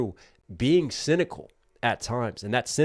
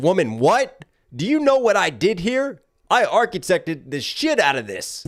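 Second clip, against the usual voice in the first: put-on, loud, pitched-up, worked-up ranting outburst; 8 semitones higher, 7 dB louder than usual. Retelling how Odysseus rants about building the bed: imitating Odysseus ranting. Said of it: "And he's like".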